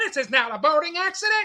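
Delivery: very high, badly done puppet-bear voice. Picturing a puppet version of a Richard Dreyfuss scene, bad Fozzie Bear impression. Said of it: "a horrible impersonation of Fozzie Bear".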